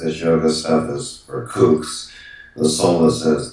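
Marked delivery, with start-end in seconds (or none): none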